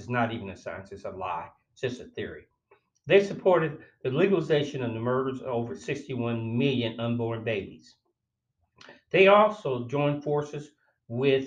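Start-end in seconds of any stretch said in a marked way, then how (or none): none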